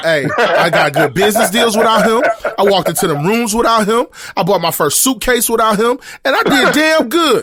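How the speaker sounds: very high-pitched, loud voice. Acting out a TV scene another speaker named: Will Smith voice. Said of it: "You sound like Will Smith in that episode about his daddy".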